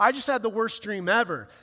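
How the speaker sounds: ordinary talk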